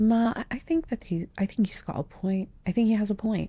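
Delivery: very quiet, soft, hushed, under-the-breath delivery. In a wedding scene, turning to the bride's mothers and speaking very quietly. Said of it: "and just say very quietly".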